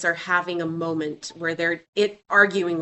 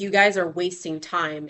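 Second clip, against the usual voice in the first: normal talking voice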